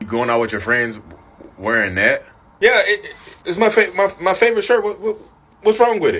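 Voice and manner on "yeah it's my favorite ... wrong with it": stammering, stuttering, much higher. In a skit, answering the narcissist's question about the shirt, stammering. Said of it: "why are you stuttering so much?".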